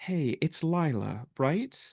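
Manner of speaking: gentle, calming, soothing, slightly high voice. In an imagined scene, a voice greets the listener, Lila, soothing voice. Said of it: "a soothing voice say".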